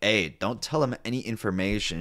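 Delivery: ordinary delivery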